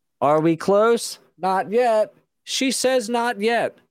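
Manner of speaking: high-pitched, slow, echoing delivery.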